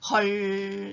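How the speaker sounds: 헐 said with a downward-sliding, falling pitch. Explaining Korean interjections, with falling pitch on '헐'. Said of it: "이렇게 좀 아래로 내리는 억양".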